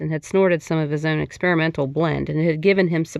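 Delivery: plain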